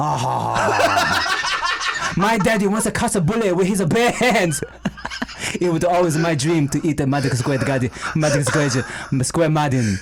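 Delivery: put-on Chinese accent speaking English. Told by a friend to imitate Jackie Chan, doing a Jackie Chan impression. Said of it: "Just imitate Jackie Chan".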